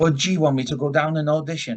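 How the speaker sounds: put-on South Welsh accent. Quoting a man who came to tell the boys his news, in his South Welsh accent. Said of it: "in his South Walian accent".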